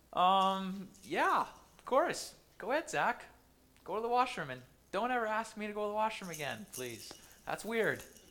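put-on uneasy, embarrassed, awkward tone. Telling a story about a student asking to leave class, voicing the professor's awkward reply. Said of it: "the professor replies awkwardly".

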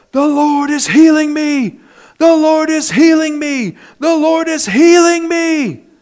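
mock very high, slow, loud, long drawn-out shouting. Retelling how a hospital patient yelled out: imitating someone yelling. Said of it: "began to yell".

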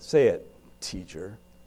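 scornful, dismissive, contemptuous sneering delivery. Reimagining how he addressed the teacher: put-on contemptuous tone. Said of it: "the contempt that may have been in his voice ... I kind of hear it this way".

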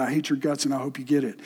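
muttered under breath. Retelling what a man said after warning a city of destruction, muttered under his breath. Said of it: "Under his breath, he muttered".

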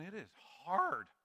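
breaking voice, cracking on "hard". Speaking to an audience, the speaker's voice cracks: voice cracking. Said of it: "My voice cracked".

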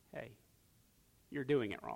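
very soft, hushed whispered aside. Retelling how someone pulled the Lord aside to correct him: whispering. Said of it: "And then whisper to him".

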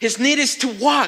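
loud, high shouting. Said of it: "I can just imagine them shouting".

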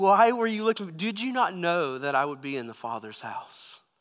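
normal talking voice

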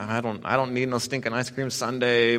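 bratty, sulky, huffy put-out tone. Retelling a refusal of a cousin's offer to share: imitating own sulky attitude. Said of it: "getting kind of this attitude".

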